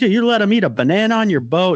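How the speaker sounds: put-on, very high-pitched yelling. Retelling Chuck yelling at the boat owner: imitating someone yelling. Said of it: "he's yelling at the".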